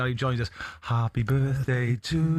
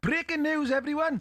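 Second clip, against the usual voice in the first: put-on Welsh accent, pitched very high; 14 semitones higher than usual. Repeating the headline line in a Welsh accent. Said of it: "In a Welsh accent".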